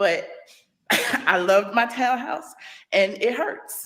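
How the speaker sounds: slow voice, getting emotional mid-sentence. Speaking on a Periscope broadcast about a townhouse they loved; emotional. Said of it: "I did not mean to get this emotional".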